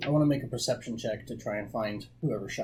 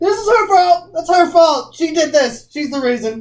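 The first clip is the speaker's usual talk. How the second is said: very high, shrill, full-volume yelling; 17 dB louder than usual. During a game session, a player speaks in character: yelling. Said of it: "stop yelling!".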